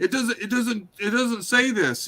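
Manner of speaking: put-on very high, agitated, worked-up voice. Retelling how a debater reacted in the debate: imitating an agitated speaker. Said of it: "when he's all agitated going".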